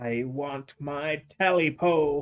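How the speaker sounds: high, hoarse croaking voice. Reading a story aloud, voicing a thing in the darkness with a high hoarse croak. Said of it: "a high, hoarse voice croaked".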